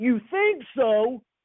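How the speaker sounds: high, loud, top-of-the-lungs yell. Retelling a coach's reply to a player: imitating Coach Bryant yelling. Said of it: "Coach Bryant yells out at the top of his lungs".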